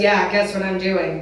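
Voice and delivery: ordinary talk, nothing marked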